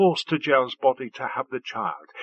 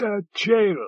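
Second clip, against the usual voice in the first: sudden, exclaimed outburst; 4 semitones higher than usual. Amorphia, going down on its knees before her, exclaims: exclaimed. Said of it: "Exclaimed Amorphia".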